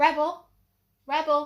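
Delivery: loud, high-pitched call.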